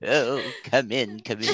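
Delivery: creepy horror-host voice, low, hushed and soft. Voicing Mary welcoming Wilbur in for dinner, Crypt Keeper voice. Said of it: "I gave her the Crypt Keeper voice".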